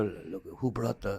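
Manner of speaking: very soft, very quiet, hushed whispered aside. Acting out people at a cookout about who brought kimchi: imitating a whisper. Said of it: "We would whisper to each other".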